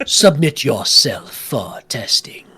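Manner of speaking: commanding, booming, resounding voice. Game master voicing a command heard in all the players' minds, booming voice. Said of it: "there is this booming voice in all of your minds as you hear".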